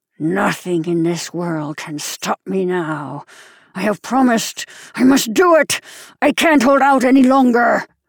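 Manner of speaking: hissing. Reading a story, a man with a knife in his teeth answers the narrator, hissed. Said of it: "he hissed".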